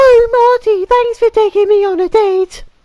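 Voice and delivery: horrible, nasty, very high squeaky voice. Retelling a date, the speaker quotes his date in her horrible, nasty, squeaky voice. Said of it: "She said in her horrible, nasty, squeaky voice".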